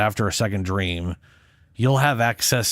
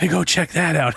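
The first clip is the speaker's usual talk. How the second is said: mock whisper, higher pitch; 7 semitones higher than usual. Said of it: "start whispering".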